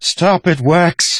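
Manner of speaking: very high, loud, shrill scream. During a gunpoint standoff over a fight in an alley, screaming. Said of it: "Leader screamed".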